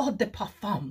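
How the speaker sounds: sudden, over-the-top, put-on French accent. Mimicking people who say one or two words in a french accent. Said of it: "they go straight into their um, French accent".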